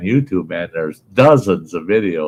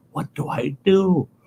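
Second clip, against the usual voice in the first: very high, slow, drawn-out whisper; 12 semitones higher, 4 dB quieter than usual. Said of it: "and he's whispering".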